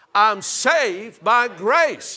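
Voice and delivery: loud, high, drawn-out call-and-response cry. Leading a crowd in a declaration after asking them to shout it: shouting. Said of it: "Shout it out".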